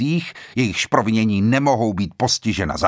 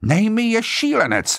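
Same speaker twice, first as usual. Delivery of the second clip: rough, hoarse outcry, pitched up; 11 semitones higher than usual. A guest on the island answers the judge: exclaimed hoarsely. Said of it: "zvolal chraptivě Blore".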